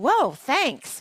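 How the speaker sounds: sarcastic delivery. Retelling a reply to a rude comment on gray hair: retelling a sarcastic remark. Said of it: "I sarcastically said".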